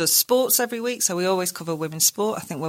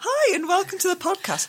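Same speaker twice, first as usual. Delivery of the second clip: stilted, very high, fake-cheery, chipper host voice. Podcaster demonstrates the show greeting they find hard to do, chipper podcast-host greeting. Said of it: "Sounding chipper has probably been the biggest challenge".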